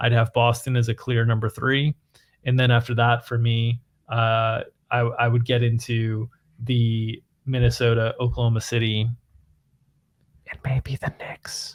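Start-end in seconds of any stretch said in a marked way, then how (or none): 10.5-11.7 very soft, breathy whisper. Ranking teams, then adding one last pick: whispered. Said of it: "I just wanted to whisper maybe the Knicks".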